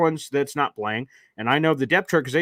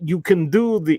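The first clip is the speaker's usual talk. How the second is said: failed put-on Swedish accent. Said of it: "I can't do an accent of the Swedish doctor".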